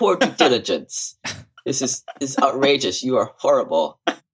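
put-on high European-accented voice. Speaker acts out a quoted remark, in a European accent. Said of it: "use my European accent".

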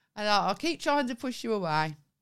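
plain

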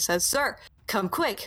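plain reading voice

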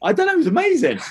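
squeaky voice gone very high. Remembering a big lad's squeaky voice, the speaker goes high-pitched. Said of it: "I've just gone high pitch there as well".

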